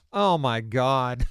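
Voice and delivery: exclamation in a voice full of disgust. Retelling how a co-worker reacted, imitating a disgusted exclamation. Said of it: "hear the disgust in her?".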